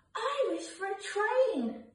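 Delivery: tiny, very high little squeaky voice. One of four bunnies hanging up stockings makes a Christmas wish, squeaking. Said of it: "squeaked Cottontail".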